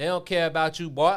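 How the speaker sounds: Southern dialect. Quoting what a player said about the league: imitating Kwame Brown's Southern dialect. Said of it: "that Southern dialect".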